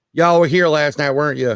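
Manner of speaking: put-on heavy Arkansas country accent. Retelling what their psychic from Arkansas asked them: heavy Arkansas accent. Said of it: "so she's got a heavy accent".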